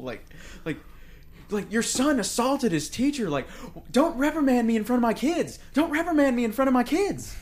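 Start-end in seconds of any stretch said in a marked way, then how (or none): 3.9-7.3 frantic, manic yelling, said twice over. Recounting the first scene where he yells at the principal; retelling a yell. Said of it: "yelling at the principal".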